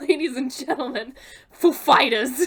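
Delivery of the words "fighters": heavy emphasis landing on the word "Fighters". Retelling how the host introduced the band: imitating stress on FIGHTERS. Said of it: "the emphasis is on fighters".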